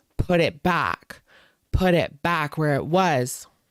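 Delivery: insistent, mild, repeated light shouting. Recounting a man screaming in his face on the street: retelling a scream.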